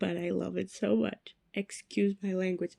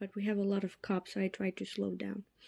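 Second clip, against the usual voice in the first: plain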